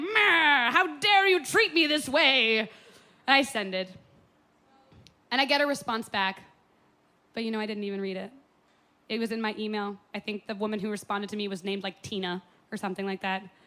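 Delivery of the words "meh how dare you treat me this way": loud, drawn-out, outraged angry huff, woman's voice.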